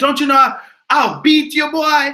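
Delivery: high, loud, threatening grandfather voice. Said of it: "He said".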